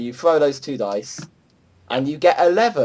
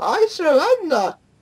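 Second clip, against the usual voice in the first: very high, put-on goblin voice. Game narrator speaking as the last goblin left alive, in a goblin voice. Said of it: "That was that was my goblin voice".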